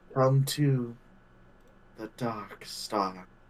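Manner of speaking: soft, gentle whisper. Voicing a voice heard in a player's ear in the dark: gentle whisper. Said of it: "you just hear a gentle whisper in your ear".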